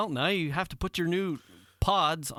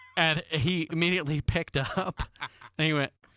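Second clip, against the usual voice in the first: ordinary talk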